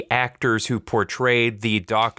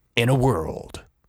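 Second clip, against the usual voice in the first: dramatic, epic movie trailer narrator voice. After telling the other to do trailer voices, the speaker tries one: movie trailer voice. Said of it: "You should really do trailer voices".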